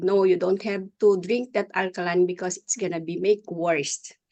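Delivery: ordinary delivery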